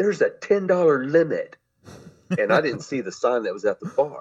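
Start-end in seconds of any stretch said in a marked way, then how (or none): 0.0-1.6 mock, shrill, loud screaming. Retelling what a bartender said at the bar: imitating someone screaming. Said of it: "she screams at me".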